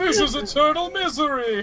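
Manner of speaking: miserable, gloomy character voice. Santa, trapped inside a hexblade sword, speaks up in a fun Santa voice. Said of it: "That does allow me to do a fun Santa voice".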